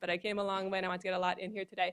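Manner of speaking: rushed, fast talking.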